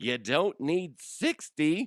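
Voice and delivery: voice cracking and breaking on "sixty". Complaining that a game doesn't need so many worlds, speaker's voice cracks. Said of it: "My voice cracked".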